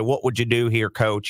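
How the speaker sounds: put-on Southern accent. Retelling what a player's dad asked the coach: imitating a southern accent. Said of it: "in his Southern accent".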